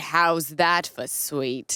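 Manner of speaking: words drawn out like a TV host. Retelling a TV show watched from the couch: Lifestyles of the Rich and Famous host accent. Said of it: "and he would say".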